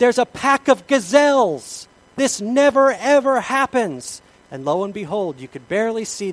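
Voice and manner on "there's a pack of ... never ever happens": mock, very loud, kid-like, excited, drawn-out shouting. Retelling what he shouted to the speaker, in a retold excited shout. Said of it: "he started shouting like a kid at Hanukkah".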